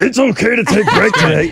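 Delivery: high, loud, furry puppet-monster creature voice. Host, asked by a co-host to do the voices, rereads a note, Cookie Monster voice. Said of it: "Why don't you try to do the voices?".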